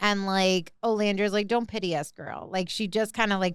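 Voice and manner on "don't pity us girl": mock sharp, curt delivery, quieter. Retelling a contestant's reply to another woman: imitating a sharp put-down. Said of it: "put her in her place".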